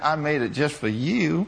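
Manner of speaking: put-on little country accent. Retelling a woman's answer about dinner, imitating her sweet country accent. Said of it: "with that sweet little smile and that little country accent".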